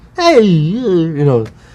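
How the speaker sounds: put-on high-pitched drunk voice with "you" drawn out. Naming influences on a voice, showing a bit of Crazy Guggenheim: Crazy Guggenheim voice. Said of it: "just a little bit of that".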